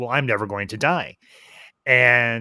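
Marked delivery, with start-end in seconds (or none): none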